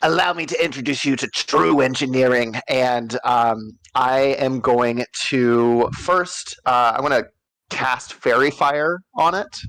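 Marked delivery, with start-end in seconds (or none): 0.0-2.6 contemptuous, disgusted, sneering voice. Voicing Skrunk who sneers at an aberration: disgusted sneer. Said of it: "just kinda sneers".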